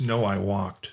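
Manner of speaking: put-on flat, expressionless delivery. Retelling his answer when she asks whether he has a boat, imitating a deadpan delivery. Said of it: "just says that deadpan".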